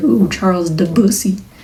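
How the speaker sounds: ordinary delivery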